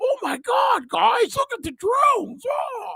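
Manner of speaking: very high, panicked, squealing cry. Auditioning as the worried guy in a horror movie, Shaggy-and-Scooby worried voice. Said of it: "that's the choice I'm making as an actor".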